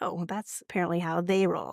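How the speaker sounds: ordinary delivery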